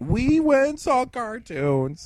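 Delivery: put-on giddy kid voice, high, slow, sing-song, stretched out.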